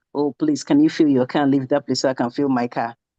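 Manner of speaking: fed-up, impatient, grumbling mutter. Retelling waiting behind someone at the filling station: imitating muttering under breath. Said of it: "muttering under my breath".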